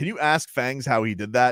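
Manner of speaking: plain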